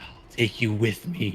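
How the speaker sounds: witch's cackle running through the words. A game master voices a grappled foe speaking to the party, cackling. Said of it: "she cackles and says".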